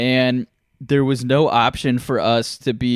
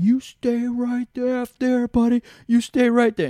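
screaming, pitched much higher than usual; 11 semitones higher than usual. Retelling a man screaming at them, reenacting screaming back at him. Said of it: "I'm screaming back at him".

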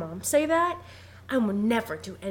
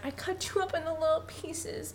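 high, soft, whiny, tearful crying; 8 semitones higher, 5 dB quieter than usual. Speaker retells a story where Jack has a nightmare: imitating Jack crying and whining. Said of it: "And he's like crying and whining".

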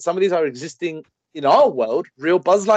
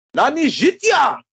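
put-on Japanese accent, much higher, louder; 11 semitones higher, 3 dB louder than usual. Dared by the others to do an impression, the speaker does a put-on Japanese impression. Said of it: "doing an impression right now".

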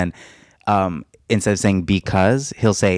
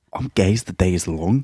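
poor fake Scottish accent that falls apart. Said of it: "that was bad. I lost it".

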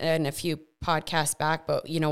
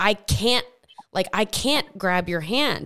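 put-on scream, higher and louder; 4 semitones higher, 4 dB louder than usual. Retelling a vision of being chained, retelling own past screaming. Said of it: "I just kept screaming".

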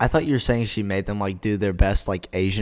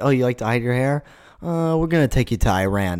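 ordinary talk

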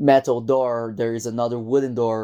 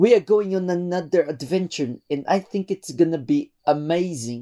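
put-on Belgian accent, pitched higher; 6 semitones higher than usual. Describing the companion on their adventures, the speaker does a Louis impression. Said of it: "I think he talks a bit like this".

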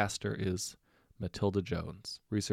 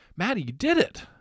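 very high, very loud, shrill shout; 13 semitones higher, 9 dB louder than usual. A man calls out to a woman who has just succeeded, shouting. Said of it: "Ben shouted".

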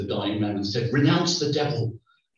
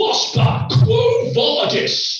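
very high, loud, full-voiced scream; 6 dB louder than usual. Recalling a latin teacher screaming at a pupil: retelling a scream at full voice. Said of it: "he used to scream at the top of his voice".

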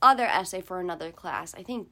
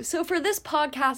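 talking mid-yawn, pitched up; 8 semitones higher, 3 dB louder than usual. Starting to introduce this podcast episode, yawning while talking. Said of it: "sorry, I'm yawning".

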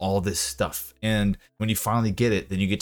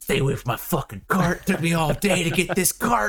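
mock frantic, very high, panicked freak-out yell; 9 semitones higher than usual. Retelling a game moment of guarding a cart from trolls: imitating own panicked yelling. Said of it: "freaking out".

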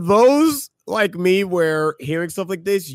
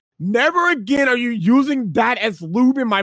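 high-pitched screaming woman's voice; 7 semitones higher than usual. Retelling what he overheard a woman shout at a man, imitating her scream. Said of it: "I hear the woman scream".

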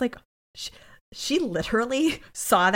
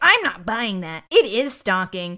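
loud, raised, pissed-off, hard pushback; 6 dB louder than usual. Retelling a TV episode scene, angry line in Cragen voice. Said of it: "I'm gonna have to restart my Cragen".

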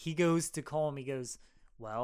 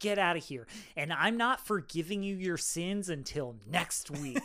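angry, pissed-off priest voice; 2 semitones higher than usual. Retelling a confession where the priest gets pissed off, imitating an angry priest. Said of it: "gets pissed off".

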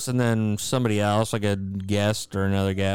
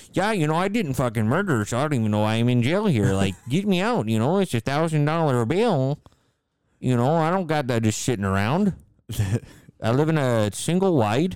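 put-on Wisconsin accent; 5 semitones higher than usual. Chatting with friends about Making a Murderer, doing an impression of the Making a Murderer guy. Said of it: "That guy's like".

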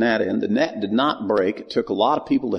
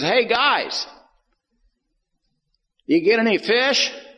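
put-on very high, drawn-out, slow calling yell; 11 semitones higher than usual. Storyteller acts out the master calling from the bank to the boat, retelling a yell. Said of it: "he yells out and he says".

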